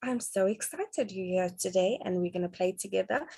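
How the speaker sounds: animated, expressive, lively sing-song excitement. Showing parents a voice for play: lively varied tone, not monotone. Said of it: "not sounding monotone, but actually your range".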